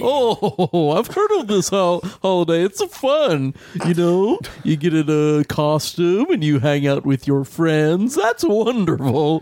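put-on goofy cartoon voice. In a role-play chat with a visitor from hell: Goofy voice. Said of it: "Why do you sound like Goofy from the Disney movies?".

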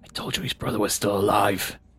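whispered aside. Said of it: "Whisper, just kinda whisper that".

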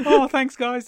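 very high, loud everyday voice. Imitating a voice actor thanking the studio for the work: imitating Mike Wingert. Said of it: "That's how he talks when he's not Tony Stark".

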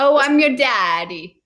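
a little put-on Italian accent. Imitating men who offered the speaker money, slightly italian put-on accent. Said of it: "I made it a little Italian".

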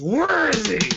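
intimidating, guttural growl from the gut. Getting right up in someone's face in character: guttural growl. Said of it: "lets out a guttural growl and gets right up in her face and says".

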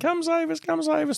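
mock very high, shrill, screamed-out cry. Recounting struggling runners calling for help, imitating people screaming. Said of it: "People were screaming".

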